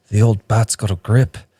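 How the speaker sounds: put-on whisper, very quiet. Retelling what they whispered while tapping someone on the shoulder, really quiet whisper. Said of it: "I whisper really quietly".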